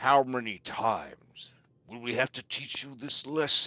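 deep-creature dragon voice. A storyteller voices the dragon flying up during a storm: dragon voice. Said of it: "And then the dragon says".

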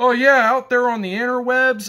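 high, sarcastic, dumbed-down voice. Retelling Poon's line from a joking response video: imitating Poon's sarcastic dumb talk. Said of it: "And Poon's all like".

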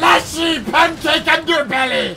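loud, slow, high excited shout.

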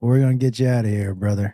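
very deep, cool and easy delivery. Imagining a rescue from a car: Matthew McConaughey impression. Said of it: "he'd look around and he'd go".

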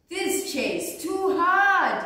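high complaining exclamation, stretched hard and drawn out. Narrator reads Goldilocks sitting in the first chair, exclaiming. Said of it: "she exclaimed".

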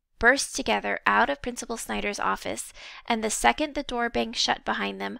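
ordinary delivery

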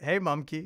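mock, put-on sarcastic tone. Reading aloud a message someone sent, imitating a sarcastic tone. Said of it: "this is all soaked in sarcasm".

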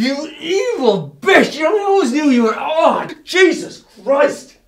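screaming. Rebuffed after offering a kiss, screaming.

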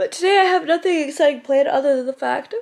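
words stretched out mid-yawn. Vlogger talking to camera about the day ahead, yawning. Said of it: "I'm yawning".

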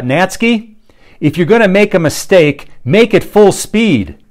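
frustrated bellow. Retelling what the frustrated coach bellowed after repeated mistakes, retelling a coach's bellow. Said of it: "he bellows out".

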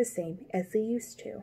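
plain reading voice

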